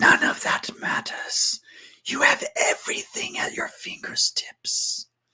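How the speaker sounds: hushed, breathy whisper, dropped low in volume. Narrating a game scene, the speaker voices the Obsidian Sorcerer, whispering. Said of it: "he whispers".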